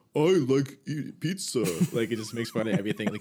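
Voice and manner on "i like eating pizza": slow, smart-ass mocking parrot-like echo. Acting out a smart-ass ghost repeating what you say: mocking repeat as smart-ass ghost. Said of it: "it just repeats everything you say".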